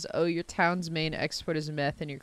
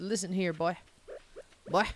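put-on Southern accent, imitated manner; 4 dB quieter than usual. Speaker riffs on sayings heard only in the south, put-on southern voice. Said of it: "No one says I tell you what outside of the South".

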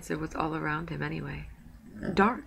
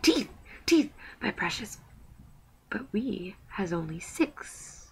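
high, hissing creature voice, swooping pitch; 4 semitones higher than usual. Reading the riddle scene aloud, the narrator voices Gollum's reply: hissing Gollum voice. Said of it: "he hissed".

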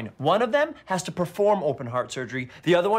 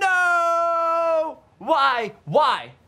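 very high, shrill, overexcited screaming, drawn-out "no"; 13 semitones higher, 5 dB louder than usual. Hearing the company is called Entertainment 720, he reacts with excited screaming. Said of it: "You gotta stop screaming".

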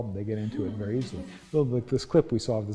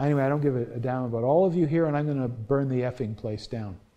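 usual speaking voice

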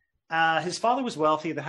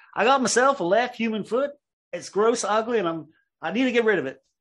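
bad, high-pitched, put-on Appalachian accent; 6 semitones higher, 4 dB louder than usual. Acting out a man's recorded 911 call to the police, in a terrible Appalachian accent. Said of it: "I'll do this terrible Appalachian accent".

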